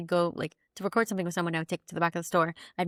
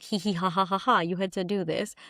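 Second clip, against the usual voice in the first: mock laughing while talking. Retelling what the boss said: imitating the boss laughing. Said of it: "My boss is laughing at me".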